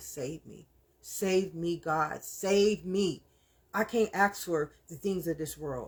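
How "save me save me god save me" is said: mock, very slow, crying, pleading voice. Retelling a lifetime of begging god: reenacting a tearful plea to god. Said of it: "I'm literally begging God my whole life".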